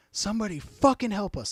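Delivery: mock top-of-the-lungs furious scream, very high. Retelling arriving at the hospital with a wounded man: retelling a furious scream. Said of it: "I'm screaming at the top of my lungs".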